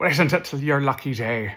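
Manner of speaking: put-on stage Irish brogue. Redoing a line meant for a pirate voice, the speaker lands in an Irish accent. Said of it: "That was Irish".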